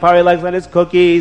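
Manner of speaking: ordinary delivery, nothing marked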